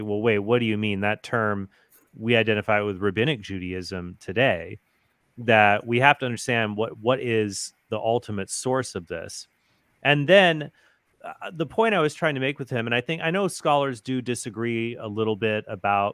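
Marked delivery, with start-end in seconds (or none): none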